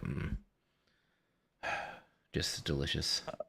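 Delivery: private, hushed whisper under the breath. Describing what they mutter while in character at an introduction, whispered under breath. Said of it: "like under my breath".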